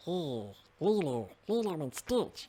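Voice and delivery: odd cartoon alien voice. Recalling a childhood cartoon, doing the Stitch voice. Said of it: "That fucking voice".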